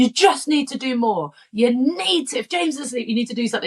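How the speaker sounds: hot-tempered, heated screaming. Speaker retells telling him during an argument he needs to do more, retelling her own screaming. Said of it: "Like I'm screaming at him".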